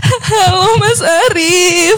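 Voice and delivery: crying, tearful speech. Greeting a man after her husband's accident, crying. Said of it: "Mbak kenapa nangis?".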